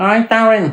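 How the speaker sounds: small, high, rat-like voice. Retelling a man calling out to him in town: Johnny Joyce's little rat voice. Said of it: "I hear this little rat voice".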